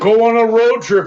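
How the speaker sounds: high, loud, mocking tone.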